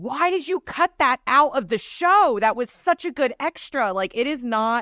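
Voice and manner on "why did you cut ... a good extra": pitched-up, high yell. Retelling what gets yelled at the TV: imitating yelling at the TV. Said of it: "there are times where I'm yelling at the T V".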